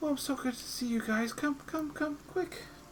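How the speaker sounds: high-pitched, soft, hushed voice holding back tears. Storyteller voicing Tilly greeting the group at the door, holding back tears. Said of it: "kind of holding back some tears".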